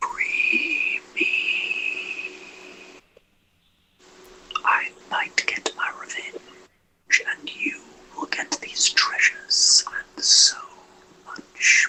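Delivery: spooky, eerie, breathy whispered entity voice. Voicing an entity imprisoned in a brass cell: spooky voice. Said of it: "Does he realise he sounds spooky".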